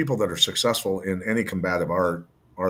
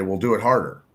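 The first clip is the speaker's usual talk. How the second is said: normal talking voice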